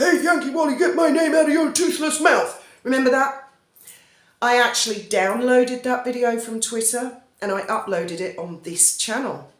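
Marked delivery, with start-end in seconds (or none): 0.0-2.6 put-on high, menacing kidnapper voice. Recalling an attack on Yankee Wally in a video, imitating Piglet's kidnapper voice. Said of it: "Piglet did the kidnapper voice".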